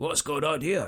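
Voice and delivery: put-on voice with Scottish accent. Describing their dog's first reaction, voicing Arlo in Scottish accent. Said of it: "He said in his Scottish accent".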